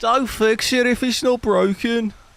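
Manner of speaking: very high-pitched, try-hard attempted Scouse accent. Trying a line in different accents, now an attempted Scouse accent. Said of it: "Say it with a Scouse accent".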